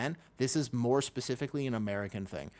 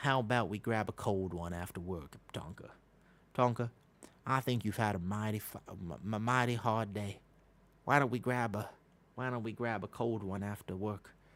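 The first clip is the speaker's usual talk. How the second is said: fake Appalachian Kentucky mountain accent; 2 semitones lower than usual. Answering a request to talk like someone from the Kentucky mountains: put-on Kentucky mountain accent. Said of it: "You want me to talk like I'm from the mountains of Kentucky?".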